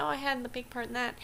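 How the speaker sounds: ordinary talk, nothing marked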